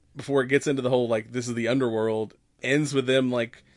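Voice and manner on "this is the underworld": ordinary delivery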